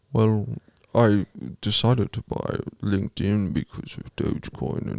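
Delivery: neutral, slow delivery. Answering as if on the line about buying Twitter: Elon Musk impression. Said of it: "It's Elon Musk".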